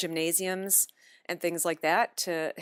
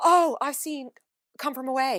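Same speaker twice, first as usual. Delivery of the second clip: eager, thrilled, excited, pitched-up gushing; 8 semitones higher, 4 dB louder than usual. Retelling how people in Toronto react on hearing the accent: imitating excited people. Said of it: "they get very excited".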